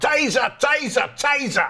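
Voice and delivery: put-on very high, loud shout in a London accent. Speaker retelling Metropolitan Police using taser guns, imitating police shouting, London accent. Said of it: "they shout".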